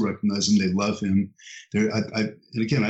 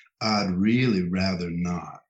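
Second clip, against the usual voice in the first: put-on, drawn-out Texan drawl; 2 semitones lower than usual. Retelling a man's refusal on the phone after a long pause, in a texan drawl. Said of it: "he said with his Texan drawl".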